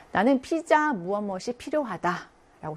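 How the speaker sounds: normal talking voice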